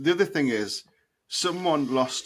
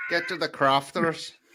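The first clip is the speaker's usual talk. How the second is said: put-on terrible Northern Irish accent; 3 semitones higher than usual. Imitating a man who talks like that all the time, terrible Northern Irish accent. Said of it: "speak in a terrible Northern Irish accent".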